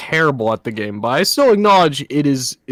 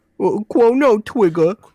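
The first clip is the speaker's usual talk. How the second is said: put-on much higher, cutesy uwu baby-talk voice; 8 semitones higher than usual. Trying to say the game title Chrono Trigger in a cutesy uwu voice. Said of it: "with the uwu voice".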